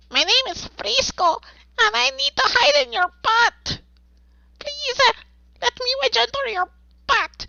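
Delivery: fast, very high, squeaky tiny dog voice. Speaker demonstrates the voice they did for their family's Chihuahua: Frisco the Chihuahua voice. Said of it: "I also did the voice for our Chihuahua".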